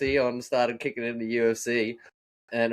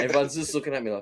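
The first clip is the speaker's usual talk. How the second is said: normal talking voice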